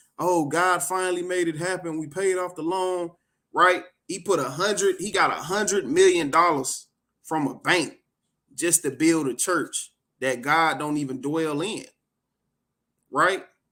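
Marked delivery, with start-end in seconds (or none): 0.2-3.1 put-on weeping, crying through the words. Retelling a clip of a church loan paid off: imitating Joel Osteen crying. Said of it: "he crying and".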